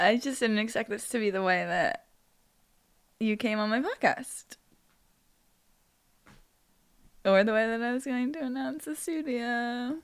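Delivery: high-pitched voice speaking through slight tears. A podcast host, already crying, opens an episode with a guest, tearful. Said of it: "you have little tears".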